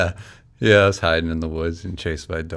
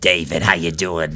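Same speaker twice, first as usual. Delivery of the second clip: strong, put-on Boston accent. Imitating a relative asking how the speaker is doing: Boston accent imitating a relative. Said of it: "Super Boston-y".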